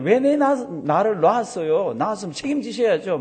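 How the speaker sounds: high, loud wailing.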